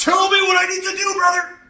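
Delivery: very loud, shrill, high scream. Showing how to demand answers from a higher power: screaming at god. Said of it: "screaming at God".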